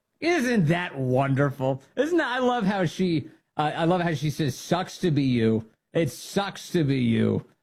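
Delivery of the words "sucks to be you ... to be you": plain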